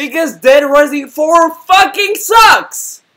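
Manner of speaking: very high, shrill, rising yelled rant. Complaining that Dead Rising four has no overtime mode, speaker is yelling. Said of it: "I'm sorry I'm yelling".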